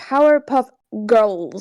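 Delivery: put-on odd O vowel sound in the word "girls". Imitating how another person says the team name: imitating Dissy's way of saying it. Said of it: "the way she said it was like".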